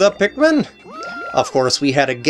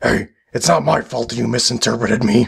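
sinister villain voice, lower; 6 semitones lower than usual. Answering a question in a skit as the evil voice guy: evil voice. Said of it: "Evil voice guy".

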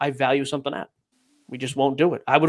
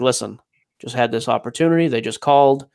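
mock-somber voice, pitched much lower; 4 semitones lower than usual. Retelling a phone call from Jesse, imitating Jesse's somber voice. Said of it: "real somber voice".

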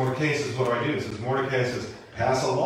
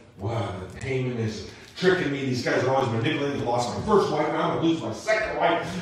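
normal talking voice

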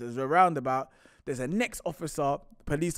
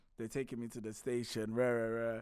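ordinary talk, nothing marked

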